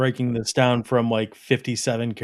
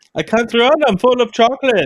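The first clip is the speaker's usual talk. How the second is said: very high-pitched, loud, put-on German accent; 11 semitones higher, 6 dB louder than usual. Asked to give their best German accent, doing a German accent. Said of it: "Give us your best Germany accent".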